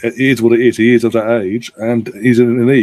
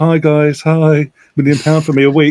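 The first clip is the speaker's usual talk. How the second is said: put-on cheerful voice, higher pitch; 4 semitones higher than usual. Mocking Messi right after his fake crying before signing for PSG: mock-happy Messi greeting. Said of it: "happy smiles".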